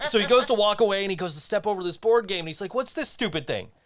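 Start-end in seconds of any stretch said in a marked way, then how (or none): 2.7-3.6 mock-angry ranting outburst. Retelling a man stepping over a board game, mock-angry outburst. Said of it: "he's like really mad, and he's angry".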